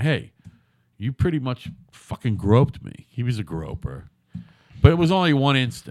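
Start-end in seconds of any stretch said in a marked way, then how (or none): none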